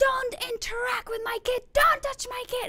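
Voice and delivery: very high scream from the lungs. Retelling a man storming toward him over his kid, retelling a man screaming. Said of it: "screaming out of his lungs".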